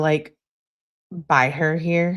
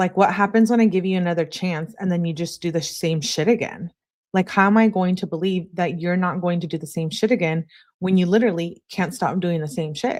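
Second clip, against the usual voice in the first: ordinary talk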